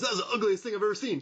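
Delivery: quick, rattled-off delivery. Quoting a movie line he loves: imitating a line said fast. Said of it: "he says it so fast".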